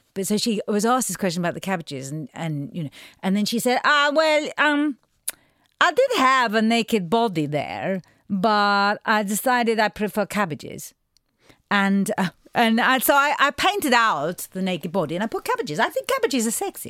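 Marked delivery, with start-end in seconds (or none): 3.8-16.9 fake, put-on Portuguese accent. Retelling an interview answer about cabbages in a cod Portuguese accent, imitating Paula Rego. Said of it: "forgive my, uh, cod Portuguese accent".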